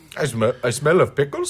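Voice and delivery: put-on nonspecific, generic, all-purpose Indian accent. Acting out a man asked why he smells of pickles: generic indian accent. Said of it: "so I just did a generic Indian accent".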